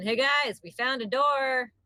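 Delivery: loud, calling-out voice. Calling out in character to the group: calling out. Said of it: "I call again".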